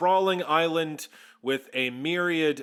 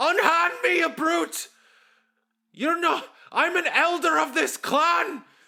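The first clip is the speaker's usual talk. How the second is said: put-on very high, indignant, furious old man voice; 13 semitones higher, 4 dB louder than usual. Voicing a frail old elder whose wrist is caught: red-faced angry elder. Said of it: "he goes red-faced".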